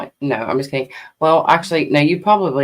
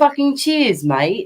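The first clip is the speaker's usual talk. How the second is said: laid-on fake Australian accent, pitched up; 9 semitones higher than usual. Admitting a habit of slipping into accents, in a put-on Australian accent. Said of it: "and then the next moment I'm Australian".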